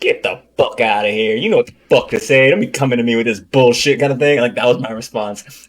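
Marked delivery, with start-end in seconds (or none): 0.0-4.0 harsh, tough-sounding, forceful rant. Retelling own reply to someone asking what to say: imitating own past hype-up rant. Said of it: "a hype you up kinda manner".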